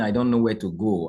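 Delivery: ordinary delivery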